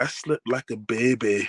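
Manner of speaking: put-on drawn-out Scottish accent. Quoting a man who trolled someone over his injury, imitating a Scottish accent. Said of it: "he got the Scottish accent".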